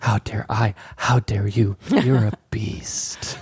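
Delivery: put-on whisper-shouted voice. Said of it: "somebody that's just whisper shouting".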